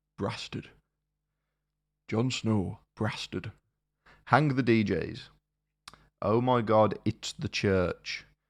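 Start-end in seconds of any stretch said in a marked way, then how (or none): 0.2-3.5 soft, put-on northern English accent. Reading out a festival line-up, saying a band name in a northern accent. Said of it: "You have to say that in a northern accent".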